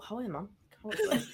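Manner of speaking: hushed mutter under the breath. Retelling what gets said behind slow walkers: imitating muttering under breath. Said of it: "I'll say it under my breath".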